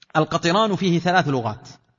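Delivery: ordinary delivery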